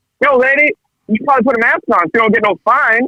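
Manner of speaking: goofy, silly, very high-pitched voice. Speaker retells telling a maskless lady to put a mask on: silly voice. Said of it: "I did it in a silly voice and everything".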